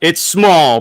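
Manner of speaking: very loud, high, exclaiming voice. Mentioning a small issue with the movie, in a loud voice. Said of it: "your voice got real loud".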